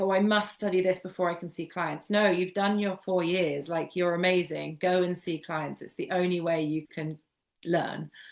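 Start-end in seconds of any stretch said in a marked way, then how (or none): none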